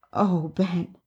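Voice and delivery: sighed, with a sigh. Narrated woman says her partner's name, sighed. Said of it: "Ray sighed".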